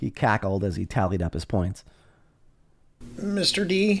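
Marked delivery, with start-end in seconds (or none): 3.2-4.0 shy, tentative, timid, pitched-up voice. Narrator reading a character's question to another at the table; timid. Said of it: "Grover asked timidly".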